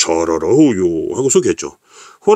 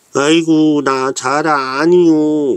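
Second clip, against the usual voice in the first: put-on high, slow turtle character voice; 7 semitones higher than usual. Telling the tiger and turtle story, the turtle answers in a put-on turtle voice. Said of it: "이제 자라 목소리 좀 바꿨습니다".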